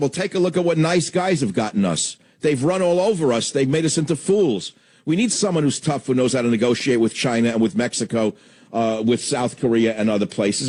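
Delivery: normal talking voice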